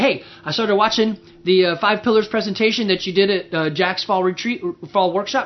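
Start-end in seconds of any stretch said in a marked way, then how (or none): none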